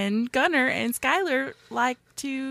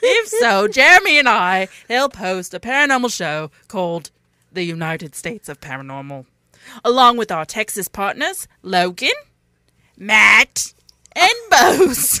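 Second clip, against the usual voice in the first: loud, put-on British accent; 3 semitones lower, 7 dB louder than usual. Reading a promo for their paranormal show, british accent. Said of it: "for the British".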